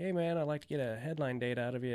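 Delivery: plain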